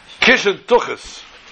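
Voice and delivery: venomous, high-pitched scream. Storyteller recounting a woman screaming at the rabbis at the door; retelling a venomous scream. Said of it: "with this venomous look and voice, she screamed at them".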